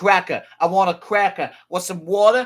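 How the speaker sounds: put-on high, loud Boston accent. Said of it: "if you're from Boston".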